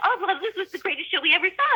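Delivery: acted-out high, rapid, excited gushing chatter. Retelling meeting a famous playwright after a show: imitating gushing fan chatter. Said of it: "we just started gabbing, like".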